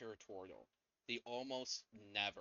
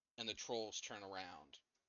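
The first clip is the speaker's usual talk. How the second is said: ordinary delivery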